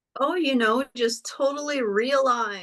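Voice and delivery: dry, tongue-in-cheek sarcastic tone. Answering how the new moon makes them feel: sarcastic. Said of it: "Is that sarcasm?".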